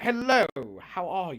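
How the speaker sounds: posh, put-on upper-crust British accent. Describing a woman raised by british nobility, imitating her in a put-on british accent. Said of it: "So she's like very British in that sense".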